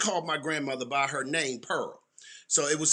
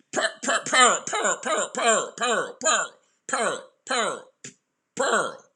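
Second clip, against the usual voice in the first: high, stuck stammering loop repeating pearl; 6 semitones higher than usual. Retelling how Glenn repeated a word, imitating Glenn's stammer. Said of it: "That's how he would say it fifty times".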